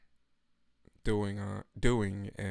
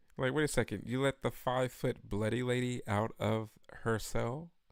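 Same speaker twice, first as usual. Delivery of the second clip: usual speaking voice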